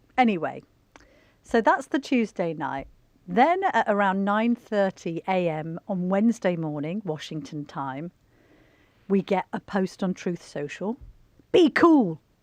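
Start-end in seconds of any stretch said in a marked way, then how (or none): 11.5-12.2 put-on American accent, higher and louder. Reading a short post aloud: Donald Trump accent. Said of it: "Shall I do my accent again?".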